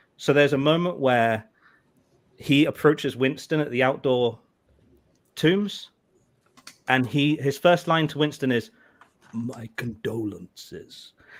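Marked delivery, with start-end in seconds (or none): 9.3-11.1 exaggerated, very slow put-on speech, much quieter. Mocking a character's first line to Winston, imitating very slow speech. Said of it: "Speed up, dude".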